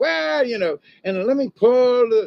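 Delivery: high, loud, teasing stage villain voice.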